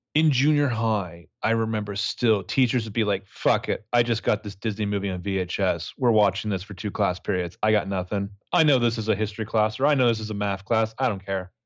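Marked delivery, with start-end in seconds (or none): none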